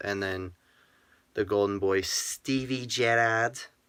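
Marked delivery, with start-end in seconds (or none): 2.0-3.6 poor put-on Scouse accent. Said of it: "my bad attempt at a, uh, Scouse accent".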